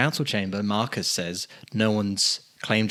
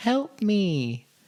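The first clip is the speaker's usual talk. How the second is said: put-on suspicious-sounding girl's voice, pitched higher; 11 semitones higher than usual. Retelling a voice calling from inside a fire: imitating a suspicious-sounding girl's voice. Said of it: "very suspicious sounding girl's voice".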